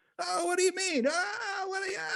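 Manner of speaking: very high, halting delivery with words repeated. Doing a Larry David impression after hearing a comment: Larry David impression. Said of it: "that's my Larry David".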